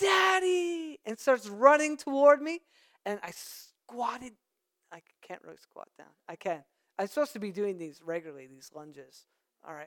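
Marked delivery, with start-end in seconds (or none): 0.0-1.0 put-on high, excited yell like a happy toddler. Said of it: "he yells".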